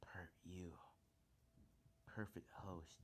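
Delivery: deep, dark monster voice. Retelling a scene where an unseen voice speaks to him: dark Venom voice. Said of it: "that dark voice".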